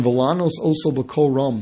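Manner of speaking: ordinary delivery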